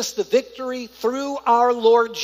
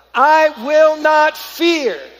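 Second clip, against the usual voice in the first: firm, full of conviction, higher and louder; 5 semitones higher, 7 dB louder than usual. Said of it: "With conviction".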